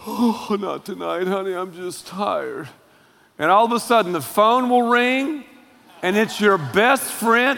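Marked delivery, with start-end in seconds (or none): 0.1-2.7 play-acted, soft, weary, dismissive voice. Imitating a wife turning down her husband: imitating a tired wife. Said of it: "wives who are like".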